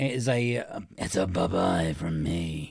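spooky voice. Signing off a review show with co-host Rich: scary voice. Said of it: "That's my scary voice".

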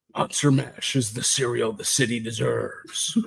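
soft, hushed, murmured superhero voice. Host reads aloud a fan comment from Dave Mattingly in a Batman voice. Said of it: "says in his Batman voice".

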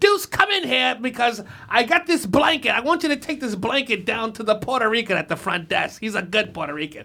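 put-on elderly woman's voice. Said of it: "She'd be like".

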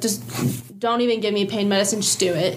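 usual speaking voice

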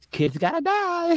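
sugary, sweet, very high kindergarten-teacher voice. A speaker imitates a woman who isn't even mean about it, in a sweet kindergarten-teacher voice. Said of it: "got this sweet kindergarten teacher voice".

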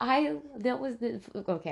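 tripping over words, laughing. Starting a story while amused by the other speaker's remark: stuttering from laughing. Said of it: "I'm, like, stuttering 'cause it's cracking me up".

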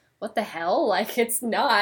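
plain

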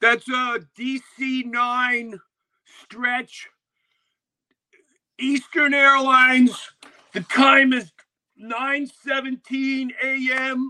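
very loud, slow, drawn-out announcer delivery. Retelling how a friend broke into a conversation to name a passing plane: imitating Billy announcing a plane. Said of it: "he'd be like this, and all of a sudden he'd go".

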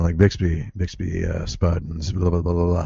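mock hoarse, gravelly voice. Retelling reading school announcements after a first concert, imitating own hoarse voice. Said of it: "A little bit lower and gravelier like this".

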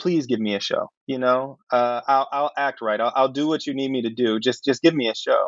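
plain

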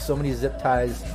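ordinary talk

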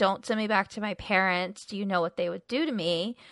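mock desperate pleading in a soft voice. Retelling a TV scene where a stowaway begs not to be sent back, imitating her pleading. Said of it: "when she's like pleading".

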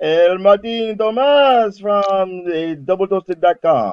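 high put-on Italian accent, grand and showy. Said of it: "That was Italian".

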